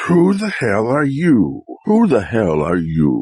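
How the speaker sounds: frightening, scary woman's voice. Imitating an ex-girlfriend as a costume: imitating an ex-girlfriend. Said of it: "the scariest creature in the world. My ex-girlfriend".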